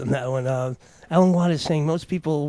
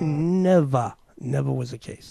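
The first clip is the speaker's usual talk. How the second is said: put-on New York accent. Repeating the previous speaker's words: put-on New York accent. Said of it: "That's my New York accent".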